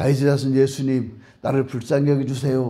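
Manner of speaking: acted, calm, restrained, well-mannered polite tone. Imagining blind Bartimaeus crying out to Jesus instead in a restrained, polite delivery. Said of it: "점잖게".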